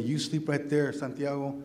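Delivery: normal talking voice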